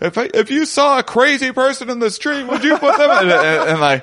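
mock-furious yelling. Retelling arguing with a man who was yelling at people: retelling flipping out. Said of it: "And then I just started flipping out".

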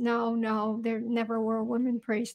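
plain

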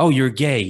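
sudden, abrupt, high-pitched blurt. Retelling how he blurted it out while the speaker stammered; imitating a sudden blurt. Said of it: "he just blurted out".

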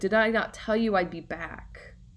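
ordinary talk

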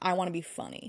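normal talking voice

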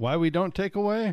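bad Southern accent.

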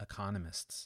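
plain

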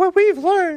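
very high-pitched, mocking, squeaky voice. Quoting climate claims, the speaker tries a mock high-pitched voice. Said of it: "I should say this in a high-pitched voice".

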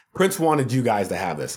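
ordinary talk

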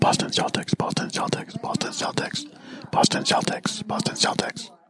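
hushed whisper, barely voiced, under the breath. Repeating a team name over and over during a movie watch-along: whispering. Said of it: "What are you whispering over there?".

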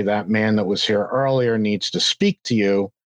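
usual speaking voice

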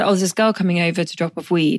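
normal talking voice

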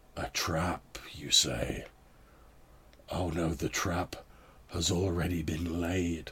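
distorted gurgle, as through water. Narrating a scene, voicing an unseen speaker in a burbling voice as if through water. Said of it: "speaking through like water or he has like fluid on his, lungs".

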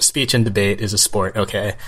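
normal talking voice

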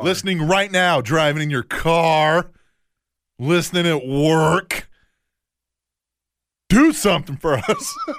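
loud rallying yell, word car drawn out. Host urging listeners to help them trend worldwide, yelling. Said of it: "You're yelling at him".

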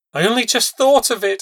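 hysterical, very high-pitched and loud. Reading a woman's line to a man in a story, hysterical. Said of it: "she said hysterically".

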